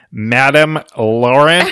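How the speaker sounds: loud, strongly American-sounding accent. Saying a french name after others tease its pronunciation: really american pronunciation. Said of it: "I'll say it really American".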